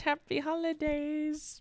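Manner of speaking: high, slow, fake-sweet polite tone.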